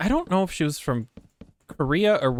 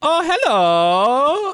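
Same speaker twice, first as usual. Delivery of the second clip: very high, long, stretched-out, drawn-out hello; 11 semitones higher, 6 dB louder than usual. Retelling a drive-thru worker's greeting: imitating a long drawn-out hello. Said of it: "this long drawn out".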